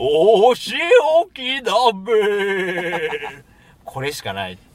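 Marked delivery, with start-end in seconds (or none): 0.0-3.1 very slow, drawn-out cartoon villain voice. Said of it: "ヤッターマンのドクロベエをどうぞ".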